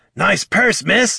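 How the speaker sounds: very high, rough jeering yell. Narrating a man calling out to a pair of people, shouted. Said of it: "he shouted to the pair".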